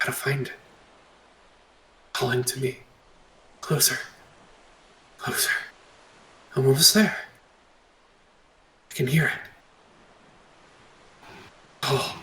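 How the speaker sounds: desperate, faint whispered muttering under breath. Narrator voicing a woman running toward a location, faint muttering under breath. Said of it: "you begin to hear mutterings under her breath".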